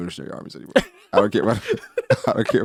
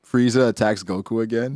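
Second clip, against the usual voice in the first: plain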